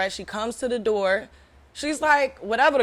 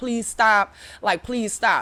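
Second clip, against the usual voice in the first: mock pleading, slower. Retelling a fight at work, quoting the woman she threw: imitating her pleading. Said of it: "she's like".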